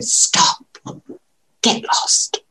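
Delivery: firm, breathy whisper, barely voiced. Demonstrating the exercise again, this time saying the same words in a whisper. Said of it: "you're going to do it in a whisper".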